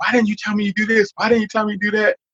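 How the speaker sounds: mock, very high-pitched, demanding shout. Retelling how a friend reacted on finding out, imitating a friend yelling. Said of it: "yelling at me".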